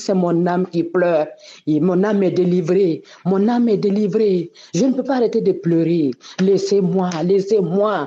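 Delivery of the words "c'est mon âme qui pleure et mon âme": ordinary delivery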